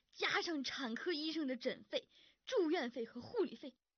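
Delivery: high-pitched, indignant outburst.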